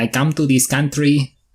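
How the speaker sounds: very slow, drawn-out, high-pitched put-on Spanish accent. Showing how to start doing a spanish accent: spanish accent. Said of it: "the easiest way to do Spanish is you start off by saying".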